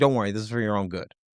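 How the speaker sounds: low, soft, very calm, soothing voice. Imagining the Empire at your door with a badge and clipboard: imitating a very calm voice. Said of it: "a very calm voice saying".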